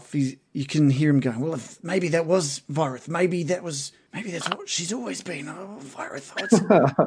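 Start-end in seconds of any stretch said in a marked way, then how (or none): 1.4-7.1 muttering to himself, higher, slower. A narrator voices a man piecing together what he just saw, muttering to himself. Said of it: "he's going to spend his time kind of muttering to himself".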